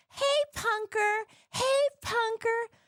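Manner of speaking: shrill, very high-pitched yelling. Retelling a mom yelling from her car: imitating a mom yelling. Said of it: "she starts yelling".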